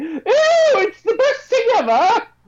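put-on British nanny accent, very high-pitched. Acting out how the speaker's dad might say it, imitating a British nanny. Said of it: "He's a British nanny all of a sudden".

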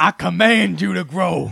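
very high, very loud, raspy, rough bellow. Quoting a video about commanding something to grow: imitating C T Fletcher. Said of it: "C T Fletcher?".

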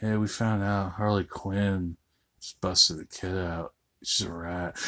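hushed, very soft, very low deep voice. Imitating the villain Victor Zsasz from the movie: soft-voiced Victor Zsasz impression. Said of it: "I have a very soft voice".

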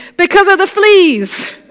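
triumphant high cry. Betsy explains why no one would come in, triumphant exclamation. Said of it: "Betsy could not keep the triumph from her voice as she exclaimed".

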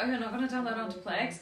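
ordinary talk

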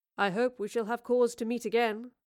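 ordinary talk

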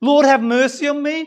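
desperate, shouted crying-out tone. Retelling the Gospel story, voicing blind Bartimaeus crying out: imitating someone shouting. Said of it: "Remember he's shouting".

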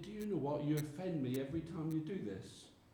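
softly spoken, quiet words. Retelling what a man said to some men, in a quiet voice. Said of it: "In a quiet voice".

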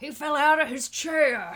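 belted slowly, loudly and high. Retelling a commentator's call of a fall: Jim Ross impression. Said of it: "That's my J R impression".

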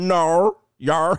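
clumsy put-on Australian accent, R added to "yeah". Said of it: "my Australian accent needs some work".

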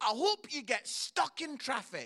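mock shouting. Retelling how a man shouted through the fence at Chelsea fans, retelling a shout. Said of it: "he shouts through the fence at the Chelsea fans".

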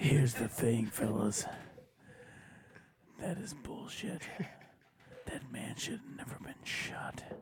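bad, breathy whispered superhero voice. Asked how Batman feels, answering in a bad Batman voice. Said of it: "That's a terrible Batman".

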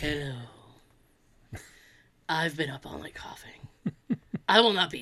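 voice sunk way down low.

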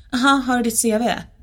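put-on smug, snooty, condescending tone. Retelling a snooty guy asking for their CV, mocking a snooty guy. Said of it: "superdryg kille där som är såhär".

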